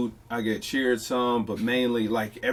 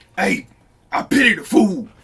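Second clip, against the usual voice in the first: booming, very loud, raised, pitched-up shout; 8 semitones higher, 9 dB louder than usual. Asked to do it, speaker gives his Mr. T impression. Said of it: "let me hear your Mister T impression".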